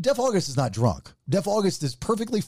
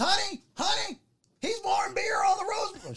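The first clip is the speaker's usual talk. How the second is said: acted frantic squealing freak-out, very high pitch; 4 dB quieter than usual. Telling a story, the speaker imitates his wife Rachel freaking out at a man. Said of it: "So Rachel freaks out on him".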